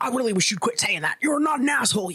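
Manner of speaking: play-acted irate, exasperated, fed-up angry tone. Retelling how a partner reacts, imitating an irate partner. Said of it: "he gets fucking irate".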